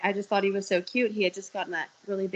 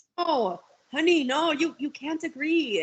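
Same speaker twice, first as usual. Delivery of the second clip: slow, high put-on Yankee accent; 7 semitones higher than usual. Retelling a man's reply in an argument: imitating a Yankee-ish accent. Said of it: "I don't know what a- accent that fucking was".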